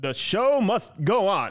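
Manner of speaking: bold heroic voice. Repeating his line on request: Alex the Hero heroic voice. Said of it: "that was my heroic alex the hero voice do you want to hear it again".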